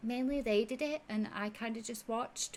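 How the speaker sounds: voice brought down low. Speaker acts out a man's answer, imitating his lowered voice. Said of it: "he kind of like lowers his voice and leans".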